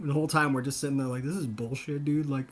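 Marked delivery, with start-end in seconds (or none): 1.2-2.3 play-acted, pissed-off, annoyed, fed-up grumble. Retelling trying to play the unwanted game, imitating own annoyed complaint. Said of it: "too pissed".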